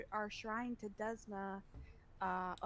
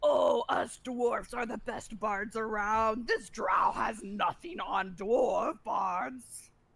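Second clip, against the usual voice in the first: booming, very loud, slow yell; 12 dB louder than usual. Voicing a dwarf bard calling through a crowd: dwarf yelling loudly through a crowd. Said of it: "yelling loudly through the crowd".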